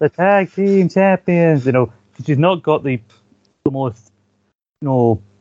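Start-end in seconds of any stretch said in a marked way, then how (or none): 0.0-1.7 slow, bored, drawn-out announcing, enthusiasm draining away. Retelling the ring announcer's team introduction: imitating Deborah's unenthusiastic announcing.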